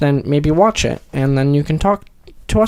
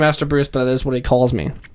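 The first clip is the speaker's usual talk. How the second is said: plain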